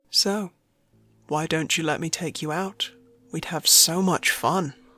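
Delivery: voice deliberately dropped deep, pitched low. Reading a story where a customer asks her out: soft, deepened voice. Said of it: "talking softly in a deepened voice".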